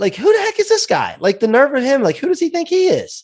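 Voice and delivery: very high, sing-song, swooping mother voice. Describing the little voice in people's heads when questioned, in a high-pitched voice. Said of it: "it's a high pitched voice".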